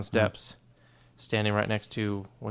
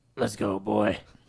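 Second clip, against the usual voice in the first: put-on pirate voice and accent; 3 dB louder than usual. Saying a line in character after another player asks: pirate voice. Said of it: "can you say it like a pirate?".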